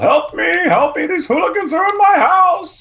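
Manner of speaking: put-on very high, shrill, doddering old man voice hollering. A player voices his character in a role-play scene, senile yelling. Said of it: "yelling in the most senile way possible".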